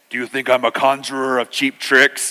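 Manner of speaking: deep, low wizard voice. Retelling the film scene where the wizard turns on Bilbo: deep Gandalf voice. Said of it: "he gets the deep voice".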